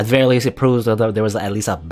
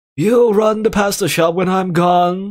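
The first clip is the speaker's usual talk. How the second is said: put-on crazy old man voice, higher pitch; 10 semitones higher, 4 dB louder than usual. Speaker suggests a way to voice a line, in a crazy old man voice. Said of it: "like a stereotypical like crazy old man voice".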